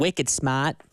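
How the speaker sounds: put-on, mock Boston accent. Praising the colleague behind the glass on air, in a boston accent. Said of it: "you got a Boston accent on the show today".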